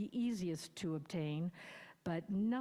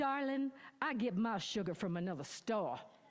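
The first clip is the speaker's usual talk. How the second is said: indignant, offended, put-on Southern accent. Retelling Angelo's answer to whether they were a couple, Angelo's mock-indignant Southern accent. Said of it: "proclaimed in his most indignant Southern accent".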